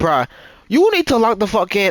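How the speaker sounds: worked-up, heated, agitated, blunt delivery. Speaker retelling what he told her about locking in, retelling getting agitated. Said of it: "I'm getting agitated".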